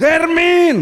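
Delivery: very loud shout at a very high pitch. Acting out how someone shouted after entering church, shouted name 'Hermin'. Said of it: "Teriak gimana? ... begitu dia teriaknya".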